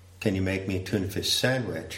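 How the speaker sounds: ordinary talk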